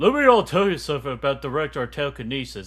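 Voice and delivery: put-on character voice with swooping pitch. Speaker announces he'll do his Hank Hill voice, then speaks in Hank Hill voice. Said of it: "I gotta do my Hank Hill voice".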